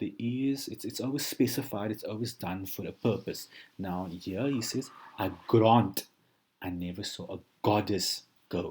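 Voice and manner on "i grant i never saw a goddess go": leaning on the g of grant, goddess, go. Reading a quoted line to highlight G words: stress on grant, goddess, go. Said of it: "I've given more emphasis there on the word starting with a G".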